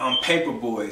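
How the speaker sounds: plain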